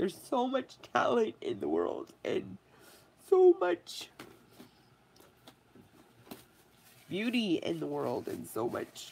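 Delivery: tearful voice, talking through tears. Speaker talks while crying, then apologizes for blowing their nose. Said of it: "Not sorry because I'm crying".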